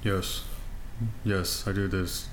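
flat, low-energy, low, slow monotone. Imitating a nervous, not outgoing guy's way of talking: flat monotone. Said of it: "like very just monotone".

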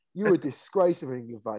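plain

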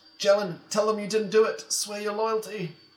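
yelling woman's voice. Narrator voicing a woman in the crowd calling out to jalen at the gallows, yelling. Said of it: "A woman in the crowd yells out".

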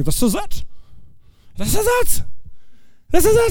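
acted, very high-pitched, rising excitement. Retelling a paralyzed man's thoughts before Jesus: acting out an excited man. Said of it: "He's all excited".

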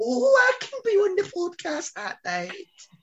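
put-on very high, swooping old woman accent. Podcaster imitating how a co-host talks, in a 70-year-old woman accent. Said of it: "what was that accent?".

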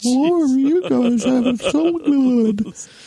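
very high, miserable, glum little voice. Describing a recurring sketch character, in the Emo Goldfish voice. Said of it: "Kevin always talks like this".

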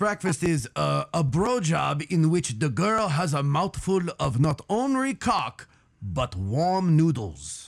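best-attempt put-on Japanese accent. Asked to explain a term, the speaker answers in his best Japanese accent. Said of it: "I will do it in my best Japanese accent".

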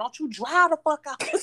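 put-on high-pitched drunken holler. Retelling being drunk in a car and yelling at a driver, retelling a yell out the window. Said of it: "I'm yelling at the window".

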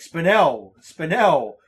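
loud, annoyed tone. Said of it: "he keeps getting more annoyed at me".

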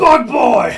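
loud yelling. Calling out for a lost companion on a ship: yelling. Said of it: "I just gotta yell".

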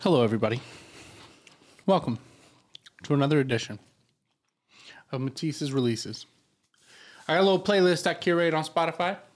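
talking while eating, mouth full. Opening a playlist segment while eating celery: talking with mouth full. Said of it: "I got celery in my mouth".

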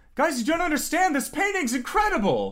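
very high, swooping calling out. Voicing someone heard down the stairs, calling out to a group. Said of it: "it sounds almost like it's calling back to".

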